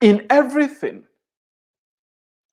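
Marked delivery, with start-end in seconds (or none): 0.0-1.1 the word everything stressed and pitched high. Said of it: "Everything means everything".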